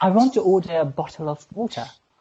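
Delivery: careful British English pronunciation. Showing another speaker the challenge line: british accent. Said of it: "It's British".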